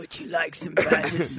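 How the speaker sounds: woman's voice, put-on, dropped deep and low. Acting out a lady's question about badges in a deep put-on voice. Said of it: "She says it in a deep voice".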